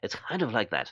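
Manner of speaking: put-on breathless speaking voice. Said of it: "he says things almost out of breath like this".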